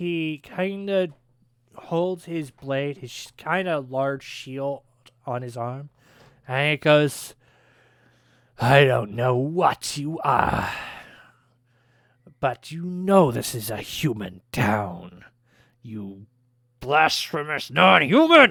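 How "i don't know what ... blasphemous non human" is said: hostile, snarling town guard voice. Narrating a game scene, the storyteller voices an armed town guard, snarling. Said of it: "he kind of snarls in your direction".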